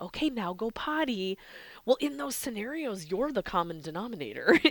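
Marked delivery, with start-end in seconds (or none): 0.0-1.4 slow, very appeasing, placating, coaxing voice. Speaker showing how an owner talks to their puppy outside: most appeasing voice. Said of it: "in your most appeasing voice".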